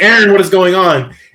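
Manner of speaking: calling out. Retelling a woman swinging in a harness calling back to aaron, imitating someone calling out. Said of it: "she's calling back".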